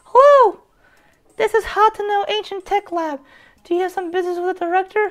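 put-on very high, dainty, petite old-lady voice. Voicing an old lady character while playing a game: petite old-lady voice. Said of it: "so I'm gonna do petite voice".

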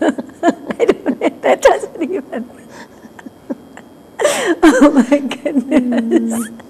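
high, loud talk with giggling through the words.

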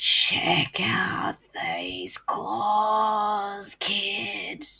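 rasping under-the-bed monster voice, claws drawn out. A narrator reads the line a voice under the bed says to the kid, raspy voice. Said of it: "a third voice from under the bed rasped".

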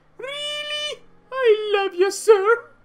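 very high, loud, put-on girly voice. Addressing the boss, in a put-on girl voice. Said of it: "you guys are annoyed by the girl voice?".

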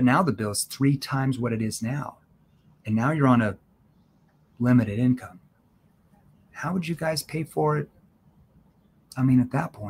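skeptical tone shifting to concerned. Showing listeners how tone works, one tone at the start, another at the end: skeptical then concerned tone. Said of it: "start with a skeptical tone and I'm going to end with a concerned tone".

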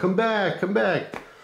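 mock, very high-pitched yell. Retelling chasing a driver who pulled away: retelling own yell. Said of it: "I'm yelling".

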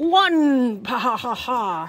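the number drawn out long, followed by laughter. Counting bricks aloud, then laughing in the Count from Sesame Street voice. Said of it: "I feel like the Count from Sesame Street".

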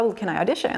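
ordinary talk

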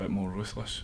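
ordinary talk

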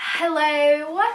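fake British accent, "hello" drawn out. Opening a video to viewers, in a put-on british accent. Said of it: "Why am I doing a British accent?".

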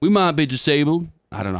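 attempted put-on American accent. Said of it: "That's the best American accent I can do".

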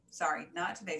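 ordinary delivery

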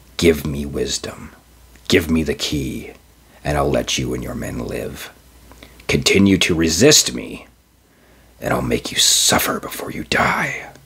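just short of a growl. The lawyer, really a thing, threatens the sergeant and his men, just short of a growl. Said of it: "He knew this lawyer, this thing".

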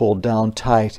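plain reading voice

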